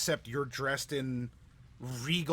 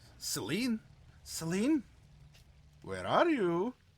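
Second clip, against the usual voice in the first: calling-out tone like a hide-and-seek call; 6 semitones higher than usual. Voicing a figure calling for celine from behind, in a hide-and-seek tone. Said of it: "In kind of hide and go seek sort of tone".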